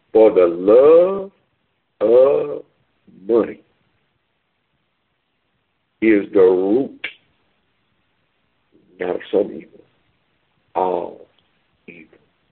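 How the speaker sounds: slow, deliberate reading with long pauses.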